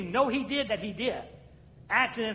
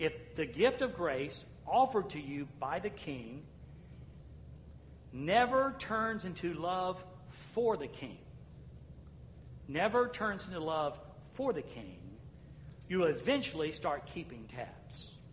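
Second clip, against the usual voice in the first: slow, careful, deliberate reading aloud; 5 semitones lower, 8 dB quieter than usual. Reading aloud from the bottom of an email to listeners, reading slowly. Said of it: "I'll try to read it slow".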